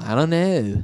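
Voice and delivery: put-on Liverpool accent. Repeating the line and comparing it to a Beatle: Beatle impression. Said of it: "that was like a Beatle".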